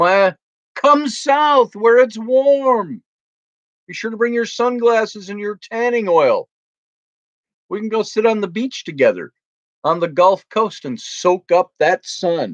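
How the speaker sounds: warm, stretched sarcastic tone. Inviting a viewer south to the beach, woefully sarcastic. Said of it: "I am being woefully sarcastic".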